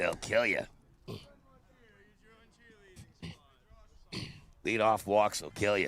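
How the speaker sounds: put-on swooping old-time ballpark manager voice, pitch swinging. After a leadoff walk in a ball game, quote the old Yankees manager in a Casey Stengel impression. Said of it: "Is that your Stengel impression?".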